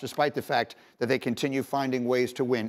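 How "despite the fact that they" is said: usual speaking voice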